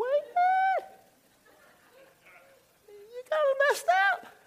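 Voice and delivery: very high falsetto voice. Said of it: "You can even use that falsetto voice like that".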